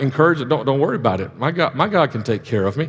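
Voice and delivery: ordinary talk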